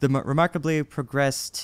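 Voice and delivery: ordinary talk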